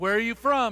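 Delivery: stern, hard-edged, harsh, demanding. Narrator voicing Joseph questioning his brothers as a stranger, harsh and demanding. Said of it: "He demanded".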